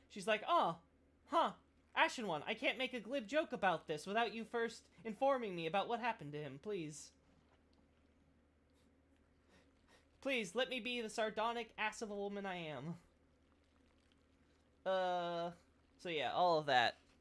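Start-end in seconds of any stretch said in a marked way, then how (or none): 0.5-13.0 high, woeful, sorrowful, put-upon mournful voice. Retelling how the handmaid reacts to the ashes: imitating the sad handmaid. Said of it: "she's all sad and all that".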